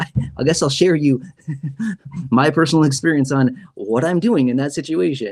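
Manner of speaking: annoyed, irritated, laughing through the words. Explaining plans for an overpayment letter from Social Security: irritated laughing while talking. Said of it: "I'm laughing 'cause I'm literally irritated".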